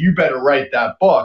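put-on deep southern drawl. Retelling what Tommy said by the fire: Tommy's deep Southern drawl. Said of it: "deep Southern drawl".

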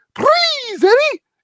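very high, loud, belted cartoon voice. Retelling a voice actor doing his character's voice at a table: Roger Rabbit voice. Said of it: "he starts doing, like, Roger Rabbit".

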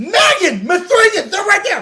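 acted, shrill, very high, loud yell. Retelling being yelled at on a trip, retelling a yell. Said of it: "I literally was yelled at".

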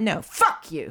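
mock hostile, really aggressive, defiant delivery. Retelling a silent reaction after being snapped at: imitating a really aggressive tone. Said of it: "in that really aggressive tone".

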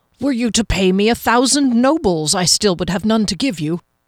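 forced, strained, put-on-sounding determination. Narrator voices the hesitant herbalist answering Kier's party with forced determination. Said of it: "and so the one following the skinny herbalist did so with no difficulty, / he said with determination that Kier thought might be just a tad forced, / and so the one following the skinny herbalist did".

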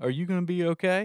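mock tearful, out-of-breath voice. Retelling what the dad asked the crying mom: imitating someone tearing up. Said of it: "my dad starts tearing up".

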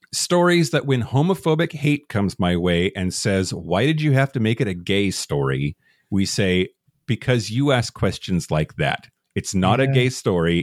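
usual speaking voice

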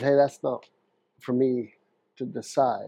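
plain

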